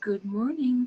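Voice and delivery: adorable, cutesy, cute little voice. Speaker tells Marilyn her morning voice is cute, imitating Marilyn's cute voice. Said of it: "your voice is so cute".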